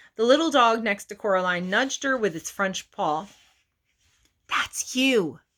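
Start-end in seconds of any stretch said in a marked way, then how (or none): 4.5-5.3 short, sharp hissed delivery. Narrator reads a little dog nudging Coraline to volunteer on stage: hissing. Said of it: "it hissed".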